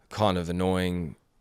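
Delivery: ordinary delivery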